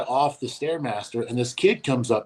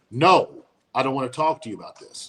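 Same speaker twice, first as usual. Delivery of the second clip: raised, firm, lifted voice. Retelling refusing a stranger at the gym: retelling own raised voice. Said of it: "I had to raise my voice at him".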